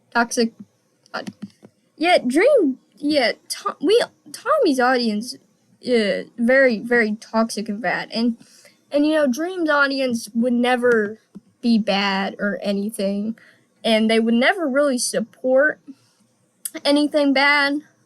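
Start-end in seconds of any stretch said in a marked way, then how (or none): none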